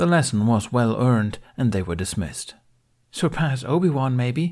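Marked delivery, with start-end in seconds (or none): 3.1-4.5 playful, light, higher, good-natured teasing. A Padawan speaks to a classmate as the lesson ends, good-natured teasing. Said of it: "teased the Twi'lek Padawan Aaron with a good-natured smile".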